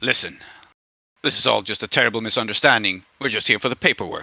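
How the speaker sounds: smooth, deep, charming voice with slight growl. Game narrator voices a character holding up a weapon, slight growl, deep and charming. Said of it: "growls slightly in a deep, like charming voice".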